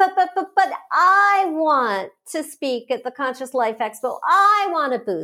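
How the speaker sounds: put-on whiniest toddler whine, two-year-old voice. Recalling jealous inner whining about an expo, mock-whiny two-year-old voice. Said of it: "in the whiniest two-year-old voice".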